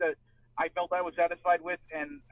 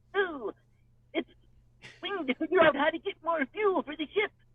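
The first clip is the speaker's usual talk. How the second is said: put-on very high little-kid voice; 11 semitones higher than usual. Answering a request to hear the Bonnie Gordon voice: imitating Bonnie Gordon's high-pitched kid voice. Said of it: "kind of a little kid voice, you know, high-pitched thing".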